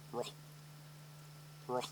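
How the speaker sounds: whispered, breathy little bull grunt on ruh. Demonstrating the call used to get a bull to come in, a little bull grunt. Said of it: "I just a little bull grunt".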